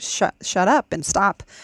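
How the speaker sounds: plain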